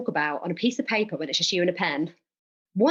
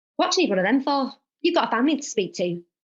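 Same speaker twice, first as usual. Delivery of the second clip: put-on Barnsley accent; 6 semitones higher than usual. Retelling how your mum sat down to question your counselling, imitate Mum's Barnsley accent. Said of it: "To anyone that's about to witness this accent".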